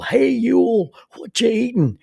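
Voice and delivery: put-on loud, very high hollered yell. Speaker acting out what a companion used to yell, retelling a yell. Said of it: "Bobby Phillips would yell".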